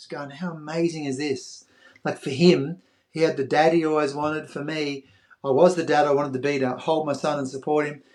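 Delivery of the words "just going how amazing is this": mock tearful words spoken while weeping. Retelling hugging his son after crossing the line, retelling a tearful remark.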